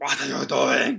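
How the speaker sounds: put-on bellowing male voice. Recalling a kayaking trip, imitating an Icelandic man, retelling a bellow. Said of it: "bellows at us".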